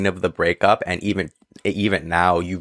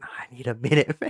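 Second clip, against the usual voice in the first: put-on crying, higher and quieter; 5 semitones higher, 5 dB quieter than usual. Retelling a friend pushing him back to get a minute: imitating Derek crying. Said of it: "He's just crying".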